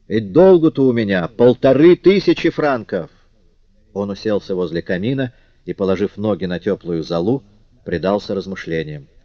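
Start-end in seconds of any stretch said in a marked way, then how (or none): 0.1-3.1 exclaiming aloud, much slower. Pacing the room, a husband suddenly speaks up to his wife: exclaiming. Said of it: "он воскликнул".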